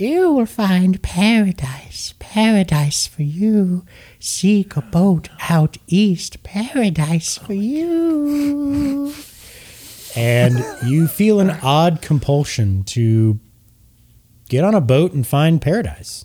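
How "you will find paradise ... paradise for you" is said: put-on overlapping whispering old women's voices, higher. Voicing voices heard in a character's head: whispering old ladies' voices. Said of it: "whispers. Sounds like old ladies talking over each other".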